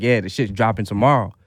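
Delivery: ordinary talk, nothing marked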